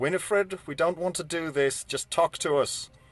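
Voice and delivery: shouting in character. Playing a character backing away with arrows notched: yelling out in character. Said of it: "yell out".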